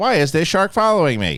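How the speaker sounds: high, synthetic text-to-speech robot voice. Retelling a video clip where a voiceover asks a question: imitating robot voice. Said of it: "and it's got the robot voice".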